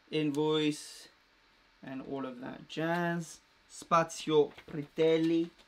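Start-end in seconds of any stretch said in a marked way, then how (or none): 3.7-5.4 loud fake Italian accent on a name. Unboxing a package from Italy, reading the name in a put-on Italian accent. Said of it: "I don't know why I'm putting on the accent".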